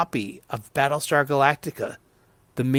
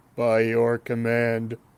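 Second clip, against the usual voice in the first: put-on robot voice, much lower; 4 semitones lower than usual. Talking about the Cylon Centurion and trying a bad Cylon voice. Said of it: "That's the worst Cylon voice you've ever done".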